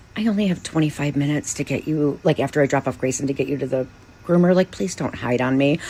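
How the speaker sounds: soft, hushed half-whisper, close, under the breath. Retelling what was half-whispered to a cat in bed: retelling a half-whisper. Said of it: "I even whispered to him".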